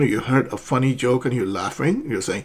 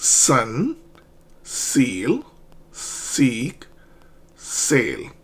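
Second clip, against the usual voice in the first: exaggerated, hissing, overdone s sound; 4 dB quieter than usual. Showing learners how to pronounce the S sound: exaggerated hissing S sound. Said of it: "I'm exaggerating these sounds".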